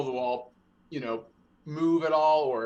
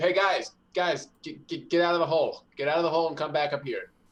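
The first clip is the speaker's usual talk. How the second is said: urgent, raised calling-out voice; 3 semitones higher than usual. Playing a character calling the group out of the hole: yelling back to the group. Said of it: "I'm just gonna yell back to the group".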